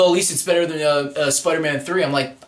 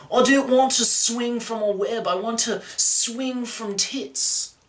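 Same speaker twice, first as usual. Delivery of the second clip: put-on Australian hipster accent, pitched up; 5 semitones higher, 3 dB quieter than usual. Imitating Andrew Garfield as an Australian hipster: Australian hipster voice. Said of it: "I can do an Australian hipster".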